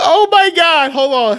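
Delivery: helpless loud laughter. Cracking up as the other person brings up a scene again, laughing so hard they can't breathe. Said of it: "I can't breathe".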